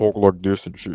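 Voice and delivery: put-on deep voice. Showing how to disguise your voice on a call: put-on deep voice. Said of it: "disguise your voice with that deep voice shit".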